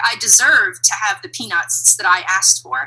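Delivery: ordinary talk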